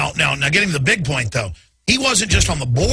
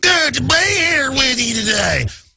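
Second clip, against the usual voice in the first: put-on very high, slow, drawn-out Kentucky Southern accent; 11 semitones higher than usual. Mocking how Hillary Clinton in Kentucky drops her Yankee accent, doing her put-on Southern accent. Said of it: "in Kentucky goes from her Yankee accent to like".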